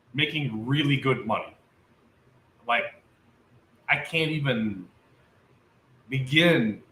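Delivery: choked up, overcome, emotional talk. Sharing news of starting a new job with Nokia, choked up. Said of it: "It's choking me up".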